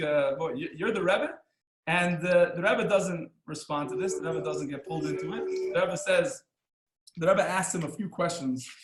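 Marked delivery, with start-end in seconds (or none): 0.4-1.3 put-on cheeky, smart-aleck tone. Retelling a boy's cheeky question to a rabbi: imitating a smart aleck tone. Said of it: "a smart aleck".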